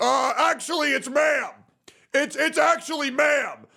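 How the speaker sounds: very high, shrill shout. Mocking a TikToker who corrects people about being called ma'am: imitating Lily Tino. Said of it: "They're a frequent person who goes up and says".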